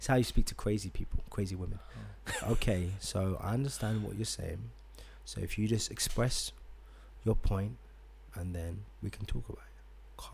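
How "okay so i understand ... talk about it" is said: calm, soft, hushed, breathy, soothing voice. Showing how to speak to crazy people, in a calm voice. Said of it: "Calm. See?".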